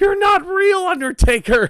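shrill, very high-pitched screaming outburst. Recalling his dad impersonating Kane while they watched a pay-per-view live; screaming Kane impression. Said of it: "I remember him screaming".

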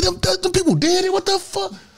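concerned voice. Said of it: "He say".

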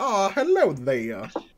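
put-on Southern accent. A game narrator voices a man greeting the player; Southern accent. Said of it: "that southerner".

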